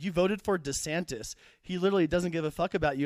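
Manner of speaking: usual speaking voice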